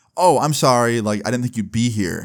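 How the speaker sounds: ordinary delivery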